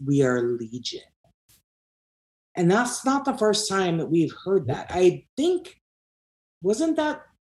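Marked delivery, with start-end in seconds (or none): 0.0-1.0 possessed-sounding demonic voice, lower and slower. Retelling a child's answer when asked who was possessing him, demonic voice. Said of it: "the child said in a demonic voice".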